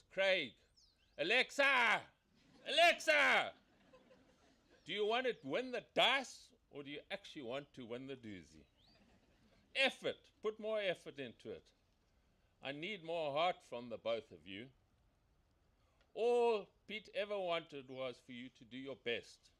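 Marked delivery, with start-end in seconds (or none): 0.1-14.6 big, booming, echoing coach-style shouting. Recalling mountain training runs, retelling the shouted instructions: retelling booming training shouts. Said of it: "that booming voice echoing in the hills".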